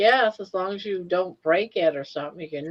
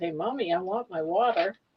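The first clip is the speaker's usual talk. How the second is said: put-on dog voice; 4 dB quieter than usual. Retelling what the thirsty dog wanted: voicing Money the dog. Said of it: "She said".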